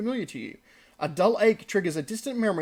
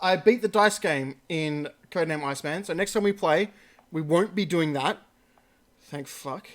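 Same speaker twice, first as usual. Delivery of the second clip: normal talking voice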